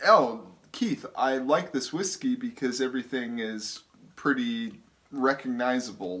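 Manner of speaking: ordinary talk, nothing marked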